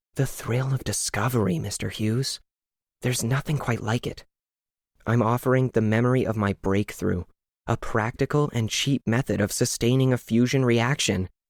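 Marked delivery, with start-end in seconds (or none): 0.1-4.2 secretive, hushed, conspiratorial near-whisper. Doctor Tremblay answers Mister Hughes's question, conspiratorial near-whisper. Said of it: "almost whispered in a conspiratorial tone".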